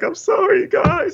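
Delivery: put-on weepy, very high-pitched crying voice. Retelling a scene where McLovin sits there apologizing, imitating McLovin crying. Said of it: "McLovin's just sitting there crying like".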